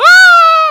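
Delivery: loud, drawn-out screaming in fear. Playing a Mario game into a mic, screaming in genuine fear. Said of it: "I keep screaming into the mic".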